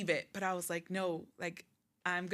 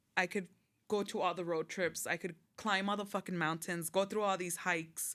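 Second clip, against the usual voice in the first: ordinary delivery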